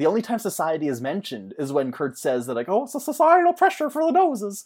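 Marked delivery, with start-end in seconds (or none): 2.7-4.7 very high, pitched-up, put-on cartoonish head voice. Quoting a line from Kurt, in a Smurf voice. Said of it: "he sounded like a Smurf there".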